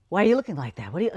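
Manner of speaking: watchful, nosy, prying mom voice. Retelling how her mom questioned her at dinner: imitating her mom. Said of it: "she'd sit across the table from me at dinner and go".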